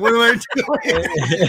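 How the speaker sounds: play-acted very slow, drawn-out, high, loud, distraught tearful crying. Recalling cutting out pieces alone in the living room, retelling own crying. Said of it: "and I'm crying, going".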